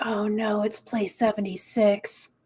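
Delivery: whispering in a put-on voice. Voicing a character watching a friend's staged bear attack: whispering in character. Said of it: "Kith just kinda whispers".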